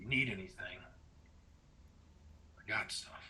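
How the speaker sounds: very quiet, sidelong muttered whisper. Voicing a prisoner walking behind a player: whispering under his breath. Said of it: "whispers under his breath".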